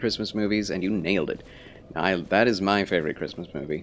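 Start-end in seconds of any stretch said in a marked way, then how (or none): none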